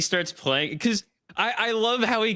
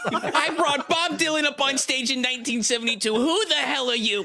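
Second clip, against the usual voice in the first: mock indignant, scolding, pitched-up angry rant; 6 semitones higher than usual. Describing a clip of a man yelling at a trumpet player, retelling an angry yell. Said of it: "this clip is just him yelling at a guy".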